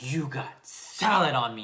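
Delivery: put-on affronted tone, slow and very drawn out. Retelling what a dripping kid said, imitating someone offended. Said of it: "all, like, offended".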